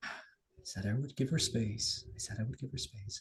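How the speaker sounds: quiet, hushed whisper. In a tabletop game, a character turns toward his room, whispering to himself. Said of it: "he just kind of like whispers to himself".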